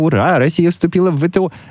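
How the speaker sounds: jubilant, gushing news reporter voice, very high. Imitating thrilled TV correspondents' reports, mock-enthusiastic reporter tone. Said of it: "Вот эти вот репортажи таких восторженных корреспондентов".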